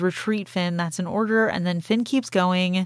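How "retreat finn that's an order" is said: normal talking voice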